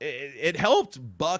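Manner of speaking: sudden cracking, breaking voice. Speaker breaking down a Rockies win over a division rival, voice cracking. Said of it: "that was a weird voice crack right there".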